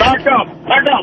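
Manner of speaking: chest-out, puffed-up tough-guy voice. Retelling a run-in outside a limo: imitating a tough guy ordering. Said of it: "he's all pumping his chest out like he's some kind of tough guy".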